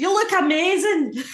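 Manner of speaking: very high, very loud, shrill shout. Retelling what a woman at a food festival shouted: imitating a woman shouting. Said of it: "this woman just shouted".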